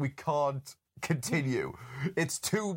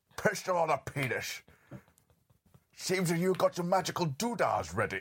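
badly faked Scottish accent; 3 semitones higher than usual. Trying again at a voice after a question: Sean Connery voice. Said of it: "I can't do Sean Connery".

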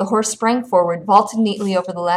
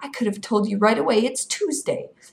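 ordinary delivery

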